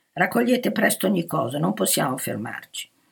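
ordinary delivery

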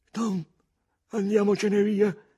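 very high, quavering, trembling voice. Huck, after staring at the mystic sign, speaks to Tom, trembling voice. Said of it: "disse con voce tremante".

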